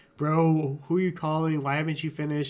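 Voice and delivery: put-on petty officer voice, yelling and scolding harshly. Retelling what a petty officer yelled at a slow recruit: imitating an officer yelling. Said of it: "Petty officer was yelling at him".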